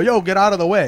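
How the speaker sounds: loud shouted yell. Retelling yelling out the window while driving past an acquaintance, retelling a yell. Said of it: "I yell out the window".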